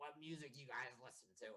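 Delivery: super raspy, scratchy, rough-throated voice. Retelling what they asked two people at the Final Four: raspy voice. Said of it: "through like my like super like raspy voice".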